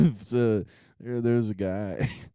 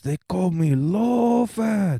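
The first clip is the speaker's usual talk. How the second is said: fake Chinese accent, very high-pitched and slow; 9 semitones higher, 5 dB louder than usual. Retelling a guy walking past them at the club, fake chinese accent.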